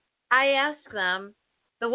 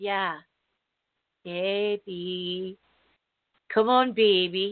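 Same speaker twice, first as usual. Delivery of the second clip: put-on Swedish-accented voice, low; 4 semitones lower than usual. Retelling how she used to wake the speaker from naps in the crib, Swedish accent. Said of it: "with her Swedish accent".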